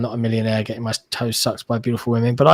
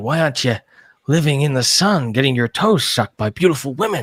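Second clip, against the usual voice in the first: silly, ridiculous put-on American voice, quieter; 2 semitones higher, 4 dB quieter than usual. Quoting a film line as an American actor would: ridiculous American actor delivery. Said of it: "kind of saying it in this ridiculous way".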